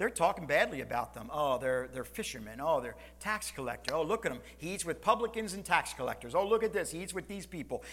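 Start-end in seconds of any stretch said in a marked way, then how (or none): none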